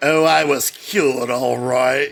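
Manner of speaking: menacing, sarcastic put-on voice. Describing the actor's voice as sinister and sarcastic: sinister sarcastic Malcolm McDowell impression. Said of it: "he's always in Clockwork Orange mode".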